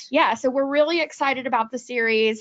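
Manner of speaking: ordinary talk, nothing marked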